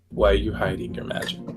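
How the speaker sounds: whispered in a put-on character voice. Getting close to a spellcaster in the game: whispering in character. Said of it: "close enough that I can whisper to him".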